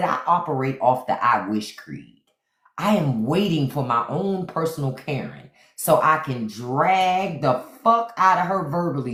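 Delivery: normal talking voice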